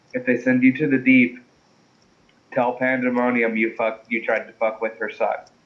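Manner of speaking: threatening-sounding whisper. Leaning in close to a prisoner before leaving: whispering a threat. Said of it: "I just get in close and whisper".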